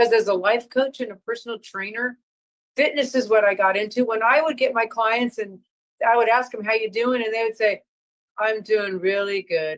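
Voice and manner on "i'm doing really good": slow, gloomy, drawn-out, droopy cartoon donkey voice. Life coach retelling a client's answer to how they are doing, sounding like Eeyore. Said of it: "you just sounded like Eeyore".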